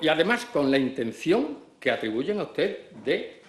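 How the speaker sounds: ordinary talk, nothing marked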